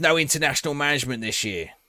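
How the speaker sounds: put-on East London accent. Trying out an accent while playing a game: East London accent. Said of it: "That's my East London accent".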